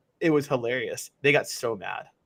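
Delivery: ordinary talk, nothing marked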